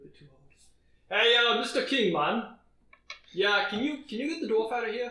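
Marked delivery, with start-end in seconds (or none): 1.2-5.1 put-on Jamaican accent, laid on thick, pitched up. A narrator voices a character addressing mister king, in a jamaican accent. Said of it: "Is he Jamaican".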